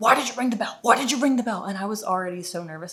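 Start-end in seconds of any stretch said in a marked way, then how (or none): 0.0-1.6 high, insistent, repeated scolding yell. Retelling how a security guard came out at her: imitating a guard yelling.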